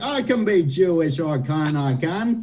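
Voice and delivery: weird, put-on Boston accent. Mocking an actor's bad accent in a movie: imitating Jared Leto's Boston accent. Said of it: "He's like".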